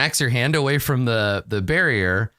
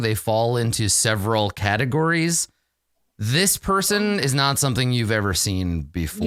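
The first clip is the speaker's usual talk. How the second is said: normal talking voice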